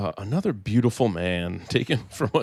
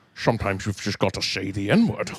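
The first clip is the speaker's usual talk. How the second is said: put-on Scottish accent. Performing a line another speaker asked for: Sean Connery impression. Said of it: "in that, uh, impression".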